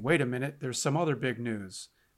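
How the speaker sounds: normal talking voice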